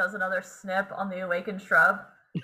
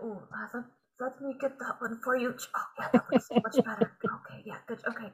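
whispered, breathy mumbling under the breath; 2 semitones higher, 7 dB quieter than usual. A character pruning an awakened shrub as it walks, muttering under his breath. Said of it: "he's kind of like muttering under his breath".

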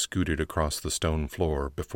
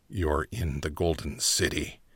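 put-on raspy, rasping old man's voice. Narrator reading a gray-haired man answering a question, rasping. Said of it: "he rasped".

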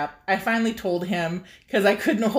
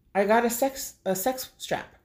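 put-on dead serious, stone-cold deadpan, no hint of joking; 3 semitones higher, 5 dB quieter than usual. Retelling telling a partner about a new strap, imitating own deadpan delivery. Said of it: "in my stone cold straight face".

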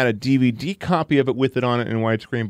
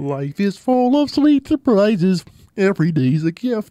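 high, swooping, sing-song dopey cartoon voice; 8 semitones higher than usual. Trying out voices in a group: Goofy voice. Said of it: "He turned into Goofy".

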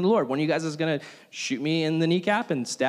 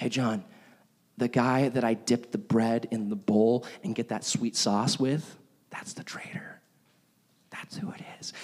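soft, hushed, confiding whisper; 6 semitones lower, 5 dB quieter than usual. Retelling a scene at a table, imitating a whisper. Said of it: "Jesus turns to John and just whispers back".

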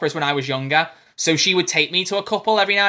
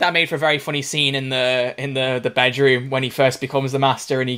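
normal talking voice

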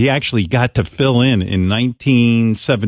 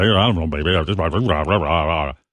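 slurred, mumbled top-forty radio DJ patter; 7 semitones lower, 4 dB quieter than usual. Mocking top forty radio DJs: imitating mumbling top forty DJ. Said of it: "this top forty mumbling about".

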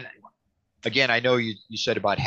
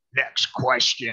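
put-on guttural voice, pitched higher; 2 semitones higher, 3 dB louder than usual. Retelling how a man refused to answer a question, guttural voice impression. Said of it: "he had a real guttural voice".

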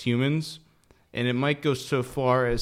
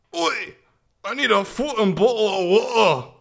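put-on Irish accent, very high; 9 semitones higher, 6 dB louder than usual. Announcing another impression, the speaker plays an Irish guy waking up hungover: hungover Irish guy impression. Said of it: "An Irish guy, when he wakes up hungover".

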